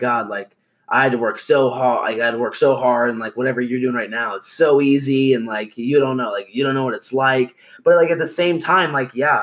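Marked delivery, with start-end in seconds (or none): none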